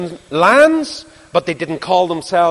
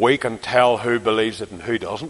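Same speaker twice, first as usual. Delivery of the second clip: put-on very deep, very low, soft Ulster accent; 8 semitones lower, 6 dB quieter than usual. You quote an older man talking to you about preachers who come along, in an Ulster voice. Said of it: "in an Ulster voice".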